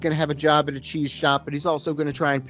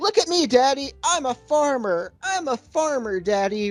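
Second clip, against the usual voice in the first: very high, shrill, unhinged screaming; 10 semitones higher than usual. Retelling a movie scene where a character screams with no audience: imitating someone screaming. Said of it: "He's screaming things like".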